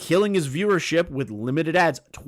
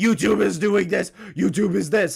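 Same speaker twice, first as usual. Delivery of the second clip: screaming, yelled rant; 4 semitones higher than usual. Denying being a tinfoil-hat conspiracy theorist: imitating Alex Jones screaming. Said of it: "screaming like Alex Jones from the rooftops".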